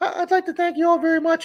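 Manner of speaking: very high-pitched cartoon mouse voice. Imitate a man who sounded just like Mickey Mouse when he talked, in a Mickey Mouse voice. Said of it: "He sounded just like Mickey Mouse when he talked".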